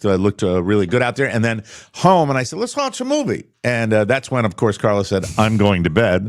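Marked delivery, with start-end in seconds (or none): 2.6-3.5 very high, way-up-high put-on voice. Retelling what you said to Carla at home, like Scooter from Mobile. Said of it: "Did you say it like Scooter from Mobile like that?".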